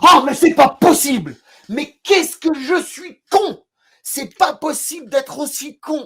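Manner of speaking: acted, very high, carried-away, worked-up outburst. Recalling his reaction when a woman forgot her wallet, retelling getting carried away. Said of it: "je m'emporte, un peu comme je le fais là".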